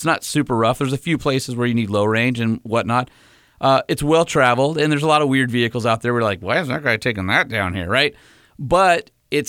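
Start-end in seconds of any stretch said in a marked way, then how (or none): 6.4-7.9 talking out of the side of the mouth. Retelling what the group said about a vehicle on the trail: talking out of the side of the mouth. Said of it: "did you talk out of the side of your mouth".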